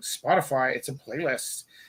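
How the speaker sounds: slow, contemptuous, dismissive, disdainful delivery. Retelling a student's answer about their music: imitating a kid's disdain. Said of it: "they say it with such disdain".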